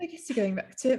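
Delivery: put-on British accent. Retelling what she said, in an attempted British accent. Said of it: "I can't even do it".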